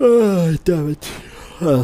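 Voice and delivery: uh spoken mid-yawn, swallowed by the yawn. A player realizing an enemy can one-shot them, yawning. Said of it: "sorry for yawning".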